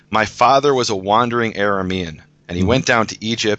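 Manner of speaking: ordinary talk, nothing marked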